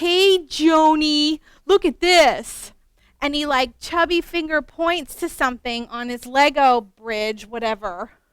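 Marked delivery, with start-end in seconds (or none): 0.0-2.7 put-on very slow, drawn-out, loud Wisconsin accent, kid voice. Telling of a boy building with Legos, quoting him: Wisconsin accent. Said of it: "he with his Wisconsin accent".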